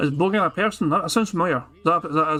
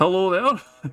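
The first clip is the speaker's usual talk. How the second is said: put-on Yorkshire accent; 3 semitones higher than usual. Doing an accent for the others, who then guess it; Yorkshire accent. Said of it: "Is that a Yorkshire accent?".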